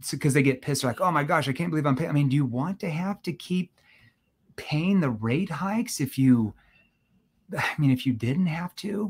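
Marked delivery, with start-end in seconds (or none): 2.3-9.1 slow, worried, caring tone. Demonstrating how to ask a question, in a concerned tone. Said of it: "Notice how my tone shifts into more of a concern tone".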